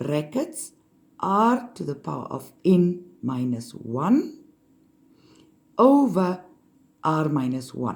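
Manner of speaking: slow, halting, deliberate, broken into pieces. Saying the part of the equation that differs, slow. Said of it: "now comes the difference that you say slowly".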